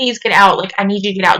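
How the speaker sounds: put-on insistent, imploring, begging tone. Recounting a past moment with a cruel person, retelling past self begging. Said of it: "Just begging, like pleading this person".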